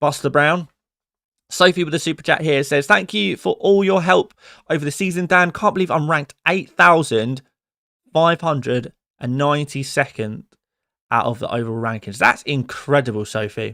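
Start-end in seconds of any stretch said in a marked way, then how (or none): none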